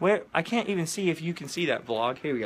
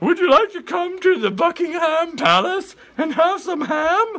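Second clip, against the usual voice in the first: pitch raised way up, loudly projected; 13 semitones higher, 8 dB louder than usual. Pretending on a phone to be Queen Elizabeth calling Tyler: Queen Elizabeth voice. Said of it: "It's me, Queen Elizabeth".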